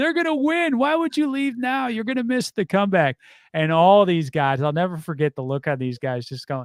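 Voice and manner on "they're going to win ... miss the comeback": put-on very high child's yell, excited and hopeful. Retelling yelling at fans leaving the stadium as a child: imitating own childhood yelling. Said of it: "just yelling at the crowd".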